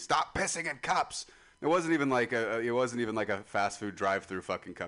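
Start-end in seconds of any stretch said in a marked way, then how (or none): 0.0-1.3 play-acted, high, drawn-out, screaming, scolding mom voice. Retelling how mom found a cup of pee: imitating mom screaming. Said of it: "she was screaming at me".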